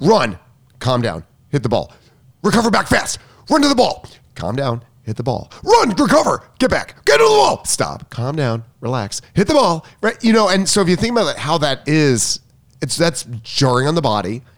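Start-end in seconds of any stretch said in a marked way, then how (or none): 0.0-9.9 short, chopped-off staccato calls. Showing how calls are given to a player during play, staccato coaching calls. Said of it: "I keep my tone staccato".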